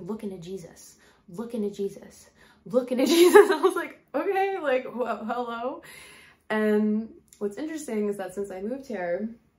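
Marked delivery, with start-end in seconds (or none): 0.0-3.5 put-on New York–New Jersey accent. Recounting hearing their dad pop in, quoting him in his New York–New Jersey accent. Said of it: "my dad had kind of like a New York, New Jersey accent".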